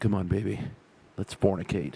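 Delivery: put-on sensual, seductive half-whisper. Acting out leaning in close to a partner: put-on sensual seductive half-whisper. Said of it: "whisper in my most sensual, seductive voice".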